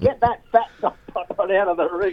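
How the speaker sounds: acted, light, mild, high-pitched yell. Retelling yelling at a boxer to get out of the ring: imitating own yelling. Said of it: "yelling at him".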